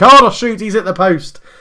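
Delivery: high, loud, excited commentator call.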